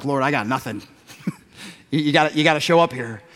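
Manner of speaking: hushed, private muttering under the breath. Retelling a buddy's prayer mid-conversation: imitating a prayer under his breath. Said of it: "he just kinda prayed under my breath".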